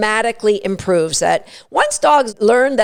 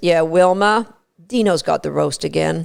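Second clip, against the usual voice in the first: low, really calm, unbothered matter-of-fact tone; 5 semitones lower than usual. Retelling a dinner story where Fred speaks up to Wilma: retelling a really calm remark. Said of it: "in a really calm voice just says".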